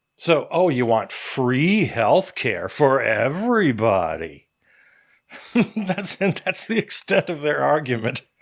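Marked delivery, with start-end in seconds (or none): 0.5-4.5 mocking sarcastic inflection, swooping sing-song. Mimicking opponents repeating a left-wing point, mock-sarcastic tone. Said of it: "only with a sarcastic inflection".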